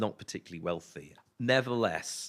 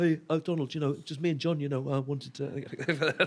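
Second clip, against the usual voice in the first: put-on Liverpool accent, higher pitch; 6 semitones higher than usual. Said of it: "the go-ahead from someone backstage to do the accent".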